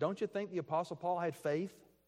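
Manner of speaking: ordinary talk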